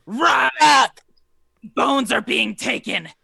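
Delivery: shrieking. Voicing a creature hit by a firebolt, calling her kin: screaming. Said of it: "she screams out and says".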